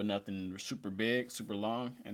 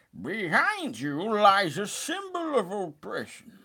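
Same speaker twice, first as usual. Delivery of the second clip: very high, very slow, loud, swooping, stretched-out villain voice; 11 semitones higher, 7 dB louder than usual. Speaker shows off the best impression they can do: Bane impression. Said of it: "my best impression is uh Bane from the Dark Knight movies".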